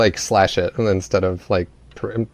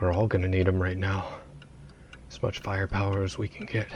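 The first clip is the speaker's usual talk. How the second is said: very quiet, fast, hushed half-whisper under the breath; 11 dB quieter than usual. Speaking as their character to the group, half-whispered under the breath. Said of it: "whisper under my breath".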